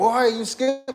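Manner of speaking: put-on high-pitched, scolding old man voice. Retelling how an old man in a store confronted him: imitating an old man scolding. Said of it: "he had that boy energy".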